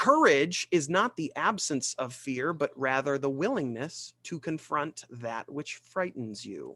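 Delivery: ordinary delivery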